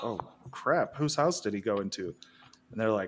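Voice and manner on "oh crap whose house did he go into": ordinary talk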